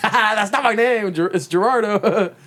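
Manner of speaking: very high, playful, joking fake laugh. Acting out a reply to a coworker misnaming him: pretend laughing it off as a joke. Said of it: "playing it off as a joke".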